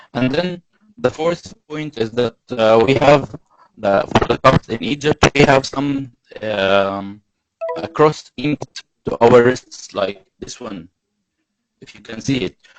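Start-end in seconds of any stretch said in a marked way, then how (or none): 0.2-10.0 louder, projected presenting voice. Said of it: "Okay, I'll try to be louder".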